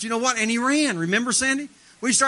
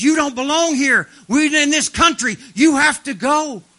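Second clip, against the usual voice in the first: mock big demonic voice, louder, higher; 2 semitones higher, 10 dB louder than usual. Recounting a man who came running and cursed them, in a big demonic voice. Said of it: "but it's a big demonic voice".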